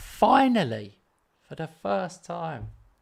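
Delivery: sounding happy and pleased. Telling Robert you finally don't have to play him: sounding happy. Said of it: "You sound happy".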